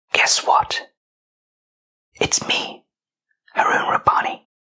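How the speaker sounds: hushed whisper. Opening a podcast episode by greeting listeners: whispering. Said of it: "Why am I whispering?".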